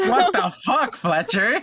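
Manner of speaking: outburst pitched very high. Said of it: "I was like".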